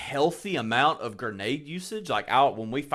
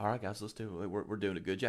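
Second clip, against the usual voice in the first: soft, flat, laid-back, chill monotone; 4 semitones lower, 11 dB quieter than usual. Retelling how a random player they queued with talked, imitating a monotone chill guy. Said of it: "he was so monotone, chill, dude".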